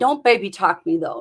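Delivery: normal talking voice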